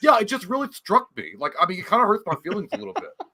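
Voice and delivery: high, swooping sing-song voice. Imitating the Reddit poster saying his feelings were hurt: imitating Kip from Napoleon Dynamite. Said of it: "He sounds like Kip from Napoleon Dynamite".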